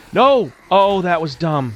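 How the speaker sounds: panicking. Reacting to a mistake while playing a game: panicking. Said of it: "I'm panicking and I'm about to freak out".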